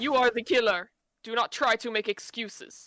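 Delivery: bad, failed put-on Russian accent. In a roleplay scene, accusing another character of being the killer, in a bad Russian accent. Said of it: "That's not even a Russian accent".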